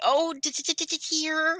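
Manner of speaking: nervous, small, soft, high voice. Retelling a funny moment, the speaker acts out Piglet's nervous voice. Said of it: "He was all nervous".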